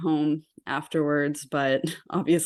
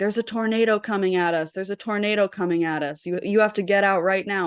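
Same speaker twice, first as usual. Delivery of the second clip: mock yelled call, like an alarm; 4 semitones higher than usual. Retelling staff running down the halls at 5 a.m., retelling staff yelling. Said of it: "the staff came running down all of our halls and yelling".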